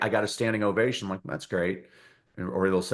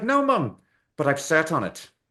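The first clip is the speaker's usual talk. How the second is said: put-on affable Irish accent, higher; 6 semitones higher than usual. Telling an Irish joke, the speaker voices the son answering his mum: affable Irishman voice. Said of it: "And the affable Irishman".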